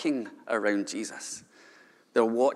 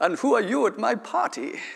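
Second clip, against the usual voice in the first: very high, fake, terrible European villain accent; 10 semitones higher than usual. Retelling a Bond film scene, the party host questions a guest in a terrible European accent. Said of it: "putting on a terrible European accent".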